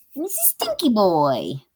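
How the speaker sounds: slow, drawn-out cartoon voice. Showing how they talk to their cat, a Ren and Stimpy voice. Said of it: "That's kinda giving Ren and Stimpy".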